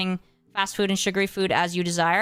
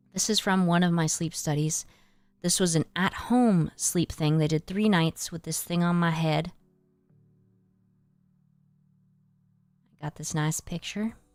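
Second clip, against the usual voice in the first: soft, quiet speech; 2 semitones lower than usual. Showing friends pictures from an at-home sleep study, talking softly. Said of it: "I'm talking kind of soft".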